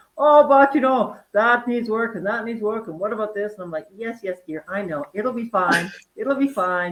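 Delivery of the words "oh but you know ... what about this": put-on Swiss accent, loud and fussing. Quoting Urs in conversation, doing Urs's Swiss accent. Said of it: "I'll do the Swiss accent".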